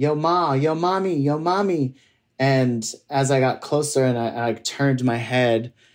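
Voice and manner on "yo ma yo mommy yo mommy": toned-down catcalling, high but easy. Retelling how guys on the street hollered: imitating men hollering. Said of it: "these guys were hollering and going".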